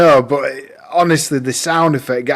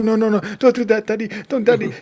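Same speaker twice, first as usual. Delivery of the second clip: put-on child voice, higher; 8 semitones higher than usual. Retelling how Grayson runs up and protests: imitating Grayson. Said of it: "he runs up to me and goes".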